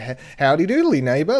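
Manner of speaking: loud, carrying call projected across a distance. Retelling a neighbor's backyard greeting, imitating him as Ned Flanders. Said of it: "he was literally Ned F-, Flanders".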